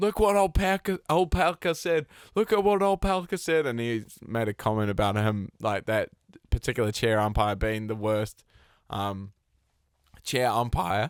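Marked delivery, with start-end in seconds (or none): 0.0-3.7 furious yell in a higher pitch. Retelling a tennis player yelling at the chair umpire: imitating Medvedev yelling. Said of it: "he absolutely starts yelling".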